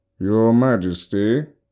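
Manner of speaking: grating, nasal character voice. The narrator voices Minister Landis calling to the king from behind, nasal voice. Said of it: "a nasal voice called from behind".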